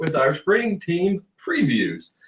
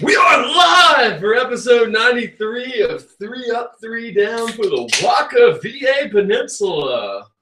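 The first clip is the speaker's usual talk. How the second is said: radio DJ announcer voice, pitched up; 6 semitones higher than usual. Host opening the live episode of the show, in a radio DJ voice. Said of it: "I love the radio D J voice".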